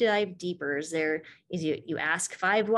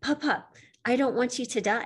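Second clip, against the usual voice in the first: tearful, crying voice, pitched up; 5 semitones higher than usual. Retelling what a granddaughter told her smoking grandfather: imitating granddaughter crying. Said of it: "she started crying. She's like".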